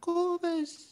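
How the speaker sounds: put-on teeny little squeaky fish voice, very high. Voicing a minnow calling out to a friend: tiny fish voice. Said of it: "in a tiny fish voice".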